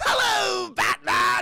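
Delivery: shrill, very loud, high-pitched, belted out. Retelling a game scene, the villain greeting the hero: Joker voice. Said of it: "It's the Joker".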